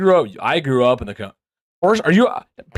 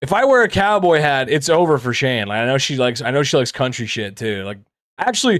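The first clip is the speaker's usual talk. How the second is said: usual speaking voice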